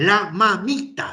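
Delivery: serious, reproachful tone. Retelling being corrected live on air, as a serious scolding. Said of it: "dice retándome, la mamita, me dice, muy seriamente".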